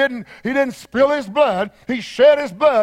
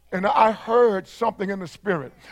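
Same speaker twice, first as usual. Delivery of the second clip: ordinary talk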